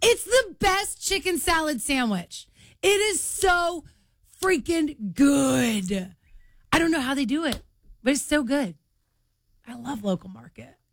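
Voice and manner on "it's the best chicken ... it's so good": really excited, high-pitched, loud gushing. Describing a favorite food to the others, excited, with an elevated voice. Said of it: "You got really excited and your voice got really elevated".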